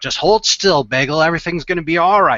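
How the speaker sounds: put-on aged-sounding older man's voice. Voicing a milk-bottle doctor patching up a patient, in an older man's voice. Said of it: "he's got kind of an older voice too".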